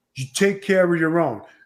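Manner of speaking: usual speaking voice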